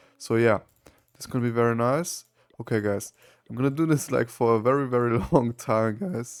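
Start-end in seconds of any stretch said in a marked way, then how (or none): 3.5-6.4 voice cracking and breaking. Talking to viewers, voice cracking. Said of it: "Whoa, voice crack".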